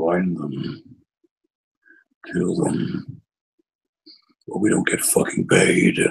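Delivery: big, rumbling put-on horned beast voice. Narrating a story, voicing a fifteen-foot horned creature: rumbling voice. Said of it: "Like rumbling voice".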